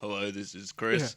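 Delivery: disguised low voice. Retelling how he put on a different voice to someone, speaking deeper. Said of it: "it was like a deeper voice".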